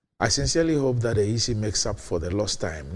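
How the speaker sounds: normal talking voice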